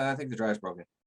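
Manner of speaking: put-on casual, offhand, unconcerned tone. Retelling what she said upstairs, imitating someone saying it casually. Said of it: "she says it like casually, like off the cuff".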